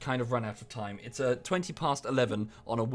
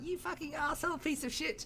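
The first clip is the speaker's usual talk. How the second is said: very high, soft, tiny squeaking mouse voice; 6 dB quieter than usual. Reading out Cake's insult from the chat: Cake's squeaky mouse voice. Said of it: "it's a very sort of mouse squeaky voice".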